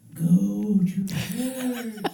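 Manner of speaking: put-on small, nagging little inner voice. Retelling an inner voice that got louder: louder inner voice. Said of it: "the little voice got louder".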